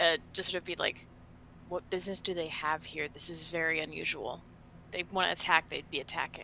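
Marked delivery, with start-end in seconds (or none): 1.7-6.4 low, muttered aside under the breath. Speaking in character while flanking another character after warning arrows: said under the breath. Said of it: "just kind of say under my breath".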